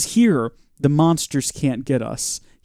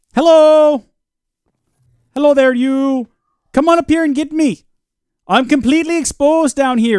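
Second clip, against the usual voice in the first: goofy put-on voice, very high and loud; 12 semitones higher, 6 dB louder than usual. Playing a game, taunting an enemy to come and get them: put-on character voice. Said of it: "I don't know why I'm doing the voice".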